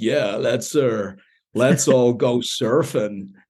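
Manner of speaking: slow, drawn-out audiobook narrator voice. Imitating an audiobook narrator another speaker admired: imitating the narrator Stephen. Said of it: "That's a pretty good impression".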